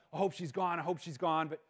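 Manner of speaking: ordinary talk, nothing marked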